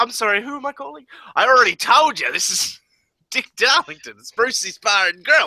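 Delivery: put-on Australian accent, pitched very high. Acting out answering the phone at Brucey's Bar and Grill, in Dick Darlington Australian voice. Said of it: "my uh, Dick Darlington Australian voice".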